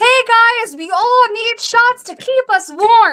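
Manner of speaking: put-on, very high, all-out, top-of-lungs yell. Speaker recounts yelling to a crowd at an open casting call: retelling own top-of-lungs yell. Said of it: "At the top of my fucking lungs".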